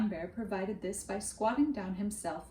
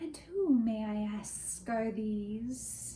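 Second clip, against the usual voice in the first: hushed, soft, terrifying, menacing voice, very slow. A narrator voicing a stranger speaking to two children, in a soft, terrifying voice. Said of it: "he said in a soft, terrifying voice".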